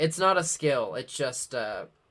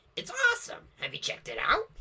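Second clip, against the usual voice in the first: mocking voice, pitched higher; 6 semitones higher than usual. Imitating another speaker gushing about a film: imitating a friend. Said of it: "so Parth's like".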